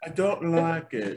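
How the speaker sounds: put-on British accent. Two speakers taking turns trying out a UK accent; UK accent. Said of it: "There we go".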